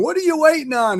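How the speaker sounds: yelling, pitched way up. Retelling how the guy at the course yelled at a rider, retelling a yell. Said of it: "the guy yelled at him".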